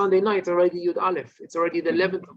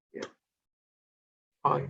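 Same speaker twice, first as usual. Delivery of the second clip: low, soft, broken voice, much quieter; 3 semitones lower, 5 dB quieter than usual. Showing how to answer a greeting on Tisha B'Av, low, soft, broken voice. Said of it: "in a low, soft, broken voice".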